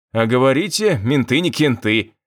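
ordinary delivery

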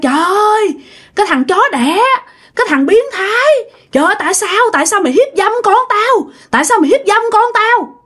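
put-on high, yelled, drunken, accusing tone. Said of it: "Ổng la làng lên".

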